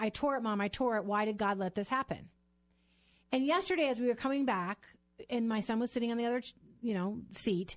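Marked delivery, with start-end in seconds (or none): 0.0-2.3 imitated tearful crying voice. Retelling how her son came to her on the court: imitating her son crying. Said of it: "came to me on the court crying and saying".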